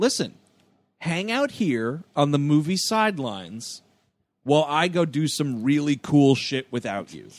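ordinary talk

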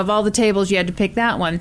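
ordinary talk

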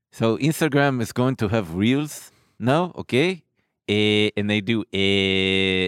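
imitated Israeli accent. Showing someone how Israelis talk, in a put-on Israeli accent. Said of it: "The Israeli accent is a lot like this. Hmm. They talk like this".

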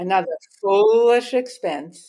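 mocking, sarcastic jab. Giving an example of sarcasm after being asked for one: sarcastic tone. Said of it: "Give me an example of what sarcasm would be".

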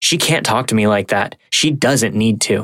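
ordinary talk

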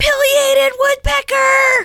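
very high, sudden, very loud scream. A mom recounting spotting a woodpecker at her feeder, retelling her scream. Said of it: "and I just screamed".

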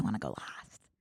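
hushed, secretive whisper. Retelling what someone whispered while waiting to review: retelling a whisper. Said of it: "whispers to Sophia".

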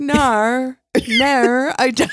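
"nar" stretched out, high and slow. Copying the other speaker's impression of the wife from the show. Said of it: "It was exact".

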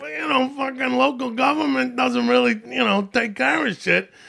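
high-pitched put-on Long Island accent, laid on. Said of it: "That's a Long Island accent?".

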